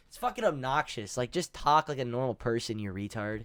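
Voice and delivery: ordinary delivery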